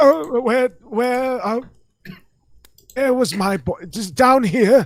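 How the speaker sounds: acted befuddled drunk, very high drunken-fool babble. In a game scene, covering after santa speaks to him, playing a drunken fool. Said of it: "I immediately play it off as the drunken fool".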